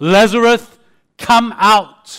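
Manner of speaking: very loud, booming, authoritative voice. Retelling the Bible story of the call at the tomb: acting out a commanding call. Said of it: "in that commanding voice".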